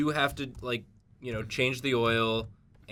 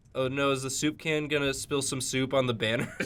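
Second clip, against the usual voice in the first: plain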